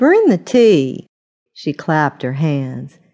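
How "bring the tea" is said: high-pitched, chiding scolding tone. A narrator reads a woman addressing another woman, scolding. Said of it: "she scolded".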